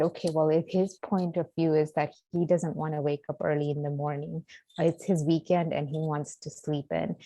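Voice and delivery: ordinary talk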